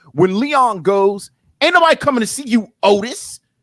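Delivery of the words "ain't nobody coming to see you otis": high, scornful, dismissive, disdainful jeering tone. Quoting Leon's line to Otis while telling a true story about him, imitating Leon's disdain. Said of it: "he's got that disdain in his voice".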